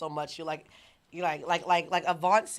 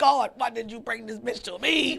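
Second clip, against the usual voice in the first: put-on angry, high, rough and ragged outburst; 6 semitones higher, 4 dB louder than usual. Retelling a man's rant from a video clip: imitating an angry man. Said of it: "he was so angry".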